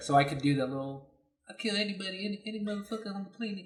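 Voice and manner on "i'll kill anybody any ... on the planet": lisping gap-toothed voice, lisp on every s sound. Showing an impression he used to do well: Mike Tyson impression. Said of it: "I used to have a really good Mike Tyson".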